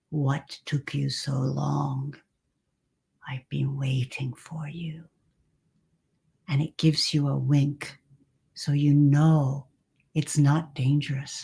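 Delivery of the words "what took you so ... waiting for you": very deep, soft, resonant rumbling dragon voice. Narrator voices a huge earth dragon greeting the listener, in a very deep dragon voice. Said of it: "says to you in a very deep voice".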